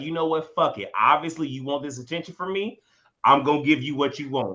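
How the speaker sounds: ordinary talk, nothing marked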